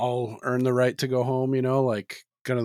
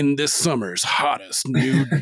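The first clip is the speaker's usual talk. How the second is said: movie trailer announcer voice; 4 dB louder than usual. Joking about a film trailer in the old trailer narrator style: movie trailer voice guy. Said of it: "the movie voice guy".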